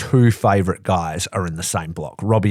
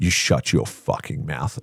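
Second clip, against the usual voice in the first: scolding voice heard from another room; 4 semitones lower than usual. Acting out Donna scolding from upstairs: imitating Donna from upstairs. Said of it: "You just hear it like this".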